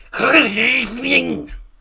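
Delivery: put-on Scouse accent. Showing how to say good evening in different accents, in a mock Scouse accent. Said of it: "if you're Scouse".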